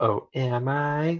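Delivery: playful, coy, teasing coquettish innocence. Retelling a game character's reply to a question: imitating coquettish tone. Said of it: "being coquettish".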